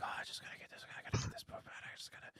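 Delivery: hushed whispered muttering under the breath. Telling about a stranger in the next bathroom stall, imitating a guy whispering. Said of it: "he's like whispering".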